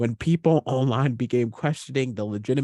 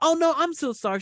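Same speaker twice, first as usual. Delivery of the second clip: chirpy, perky, pitched-up, eager-to-please polite tone. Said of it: "I go up there all perky".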